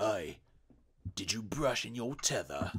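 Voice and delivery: put-on hushed, menacing, old-time British street thug voice. Discussing a threatening-sounding phrase, a speaker voices it as a thug would: old-timey british thug voice. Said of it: "an old timey eighteen hundreds British like thug asks".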